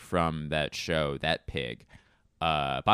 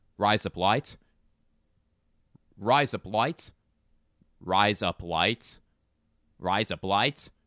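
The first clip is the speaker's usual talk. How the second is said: put-on Australian accent, said over and over. Showing how a phrase sounds like another phrase, in an australian accent. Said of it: "it sounds like you're saying razor blades in an Australian accent".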